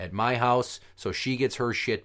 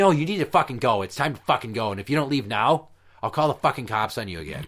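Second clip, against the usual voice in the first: put-on angry, vitriolic ranting. Retelling how a woman angrily ordered the speaker out: imitating someone spewing vitriol. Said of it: "belching vitriol at me".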